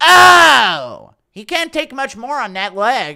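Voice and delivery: very loud, high bellow, stretched "Oh". Performing an impression of him when the weakest leg kick ever lands, Joe Rogan impression. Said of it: "Impression of Rogan".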